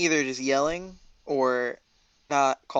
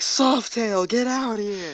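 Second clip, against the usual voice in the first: acted, all-out high scream at top of lungs; 7 semitones higher than usual. Calling out to Softail in character during a chase: screaming at the top of lungs. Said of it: "I scream at the top of my lungs".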